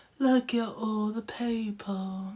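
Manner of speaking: hushed, very slow character voice, every word drawn out. Apologizing, the speaker repeats a line she saw someone say, in a Drusilla voice. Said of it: "I had to do the Drusilla voice".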